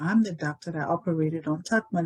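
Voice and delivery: normal talking voice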